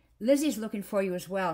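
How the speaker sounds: earnest pleading. Holly pleads with Jack through the wire fence, pleading. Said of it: "she pleaded".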